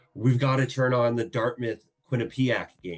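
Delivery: loud shouting. Retelling calling to his wife on the couch: imitating himself yelling. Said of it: "yelling at her".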